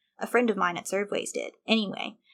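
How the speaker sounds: ordinary delivery, nothing marked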